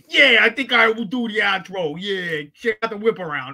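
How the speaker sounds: put-on New York accent. A show co-host is asked to do the outro in his new york accent. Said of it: "you want to do the outro in your New York accent?".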